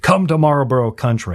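put-on commercial narrator voice. Speaker recalling old cigarette ads, doing the Marlboro ad narrator voice. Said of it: "That's my best version".

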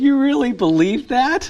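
high, slow, mocking, incredulous scoff.

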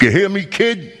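put-on a light touch of tough-guy Brooklyn accent. Retelling what he told a kid, in a mock-tough Brooklyn accent. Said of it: "I even threw in a little Brooklyn accent".

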